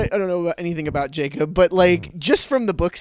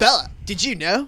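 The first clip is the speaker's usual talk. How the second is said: chill, laid-back surfer dude voice; 2 semitones higher than usual. Acting out their headcanon of Jacob talking to Bella, as surfer-dude Jacob. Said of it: "Jacob is a surfer dude".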